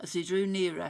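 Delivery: ordinary delivery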